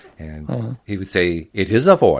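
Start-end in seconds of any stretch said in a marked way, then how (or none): 1.5-2.2 mechanical, computerized, synthetic speech voice. Retelling how someone did the Hawking voice, in a Stephen Hawking computer voice. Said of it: "the mechanical computerized voice".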